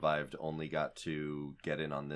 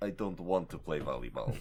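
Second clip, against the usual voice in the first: put-on Russian accent. Voicing an imagined man spitting out a mouthful of sand, in a russian accent. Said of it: "he's Russian now".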